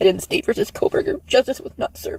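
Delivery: on the verge of tears. Reading a statement aloud to her audience, on the verge of tears. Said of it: "is she crying?".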